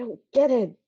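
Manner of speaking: whispering. Voicing a character who confides in another character: whispering. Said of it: "She's just whispering to Mara".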